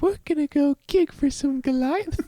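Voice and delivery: put-on very high, childlike caricature of a woman's voice. Speaker puts on a voice while joking with another speaker, misogynistic woman voice. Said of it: "misogynistic woman voice".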